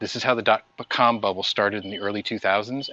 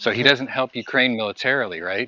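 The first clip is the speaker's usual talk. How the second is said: ordinary delivery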